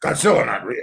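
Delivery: curt, snippy tone full of attitude. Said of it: "with a real A T".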